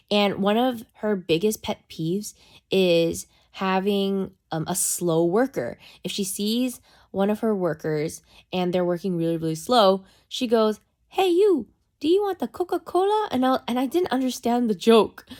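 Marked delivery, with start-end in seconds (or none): 11.0-13.3 put-on heavy, very high-pitched Vietnamese accent. Retelling a TikTok about a slow nail salon worker: Mimi's heavy Vietnamese accent. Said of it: "she talks in the heavy, like, Vietnamese accent".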